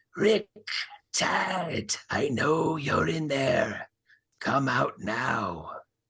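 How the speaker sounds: high, raspy voice calling out. A figure calls out from the front door to rick and tad, raspy voice. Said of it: "you hear a raspy voice call out".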